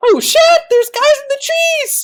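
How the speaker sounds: crackly, shrill woman's voice, very high and loud. Retelling what someone said, crackly woman's voice. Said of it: "he actually says it in like a crackled woman's voice".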